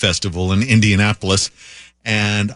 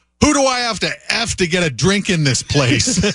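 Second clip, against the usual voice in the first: put-on, very high bellow at top of lungs; 9 semitones higher than usual. Retelling how a gentleman shouted in a crowded bar: imitating someone shouting at top of lungs. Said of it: "shouts at the top of his lungs".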